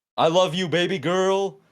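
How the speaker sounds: loud, high, long drawn-out call. Retelling what the new security guard shouted into the crowd: imitating someone shouting. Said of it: "he shouts into the crowd".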